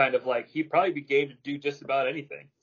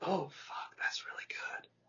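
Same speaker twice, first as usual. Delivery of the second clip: whispered, higher and quieter; 3 semitones higher, 12 dB quieter than usual. Reacting to the other speaker's pick of Mick Foley: whispering. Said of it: "I don't know why I whispered that".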